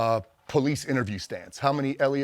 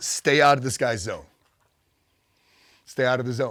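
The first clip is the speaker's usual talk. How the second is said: usual speaking voice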